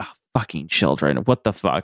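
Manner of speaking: irritated, fed-up, annoyed, exasperated swearing outburst. Retelling a scene where a character hears children crying: imitating an annoyed character. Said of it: "she looks so annoyed".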